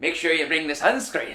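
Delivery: put-on weak Irish accent drifting Scottish. Quoting a housemate's warning about sunscreen, in a bad Irish accent. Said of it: "in her Irish accent".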